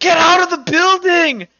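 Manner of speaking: shrill, very high, loud shrieking scream. Narrating a scene where the players hear someone outside: screaming. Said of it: "you guys just hear this screaming".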